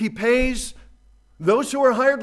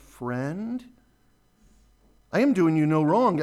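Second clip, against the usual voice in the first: tender, gentle voice. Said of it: "you could just get the tenderness of the landowner".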